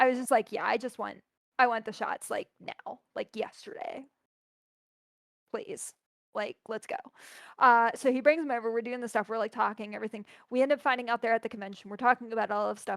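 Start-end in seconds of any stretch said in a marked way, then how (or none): 0.5-6.9 pushy, entitled, demanding delivery. Retelling ordering a round of shots for two tables, imitating a Karen-esque demand. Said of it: "in such like a very like Karen-esque way".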